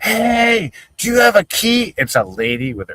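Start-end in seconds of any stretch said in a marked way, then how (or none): 0.0-1.9 mock, very high, slowed, drawn-out shout. Retelling how a locked-out friend yelled at a lady: imitating someone yelling. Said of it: "he's yelling".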